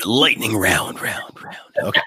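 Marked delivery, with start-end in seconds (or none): 0.0-1.0 put-on intro announcer voice. Show host introducing the lightning round segment, doing the special voice. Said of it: "I got to do the voice".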